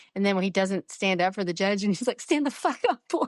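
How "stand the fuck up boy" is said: play-acted, furious, very high-pitched yell. Recapping an episode, the speaker quotes Paul's attorney when the client won't stand: imitating a really mad yell. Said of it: "he gets really mad".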